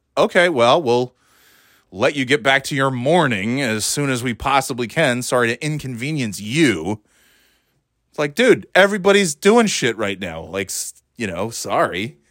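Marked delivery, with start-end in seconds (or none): none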